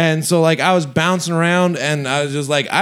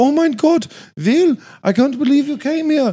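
wobbly, slipping fake accent drifting Indian, pitched up; 9 semitones higher than usual. Quoting a woman at her birthday party greeting Will, accent slipping to sound Indian. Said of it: "That sounded kind of Indian".

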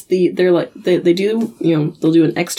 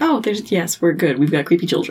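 ordinary talk, nothing marked

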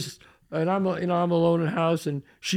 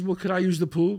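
usual speaking voice

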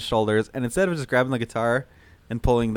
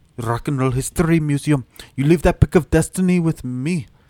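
put-on Russian accent, louder; 3 semitones higher, 5 dB louder than usual. Retelling a scene from a story, speaking in a russian accent. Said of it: "I lost my Russian accent".

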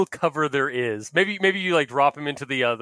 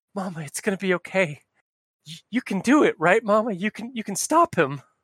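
feeble, halting, barely alive, higher pitch; 5 semitones higher than usual. Voicing a wounded creature holding a player's arm: weak dying voice. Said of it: "weakly, he's still alive, like, very weakly".

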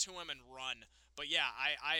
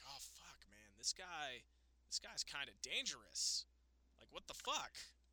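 much softer, hushed voice. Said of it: "the Reigns character is gonna be like".

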